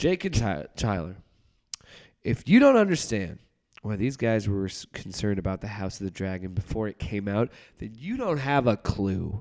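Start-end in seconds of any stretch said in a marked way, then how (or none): none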